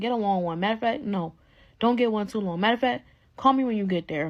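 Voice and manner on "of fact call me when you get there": normal talking voice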